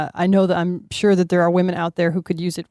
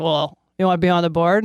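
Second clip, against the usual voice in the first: put-on deadpan delivery. Retelling an offer made after the show: imitating Abby's deadpan style. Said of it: "in her sort of usual deadpan style".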